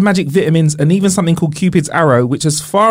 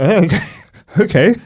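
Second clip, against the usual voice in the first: muffled, speaking as if mouth is full; 3 semitones higher than usual. Playing a patient answering a doctor about eggs, speaking as if mouth is full. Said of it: "Why are you speaking like you've got a cock in your mouth".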